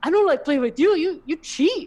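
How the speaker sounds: very high, very loud, shrill furious outburst. Retelling how a losing uncle yelled during a game: imitating uncle yelling. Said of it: "he's yelling".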